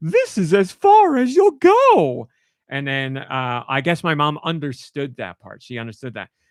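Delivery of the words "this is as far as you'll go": very high, very loud, goofy, shrill, swooping voice. Recounting a Super Mario Advance line, doing Birdo in a very silly voice. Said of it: "in a very silly voice".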